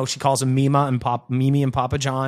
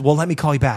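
put-on whisper, faster. Retelling what a woman said to her mom on the phone, retelling her whisper. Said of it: "she's like whispering or something".

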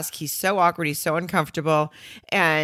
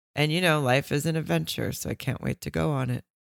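mock boring, bored-sounding tone; 4 dB quieter than usual. Retelling a groom reading his vows aloud: imitating a boring delivery. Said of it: "he says it's so boring".

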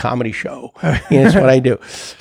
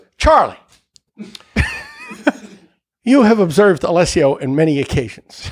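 solemn, serious courtroom attorney voice; 4 semitones higher than usual. Retelling a pretend trial, imitating him questioning a ten-year-old witness in a lawyer voice. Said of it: "he had his lawyer's voice".

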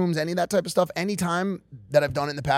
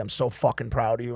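usual speaking voice

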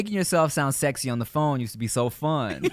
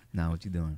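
mock comfortable, relaxed, easygoing, casual delivery; 8 semitones lower, 8 dB quieter than usual. Retelling talking to a girl on the phone, imitating a relaxed, comfy voice. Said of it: "I get real comfortable".

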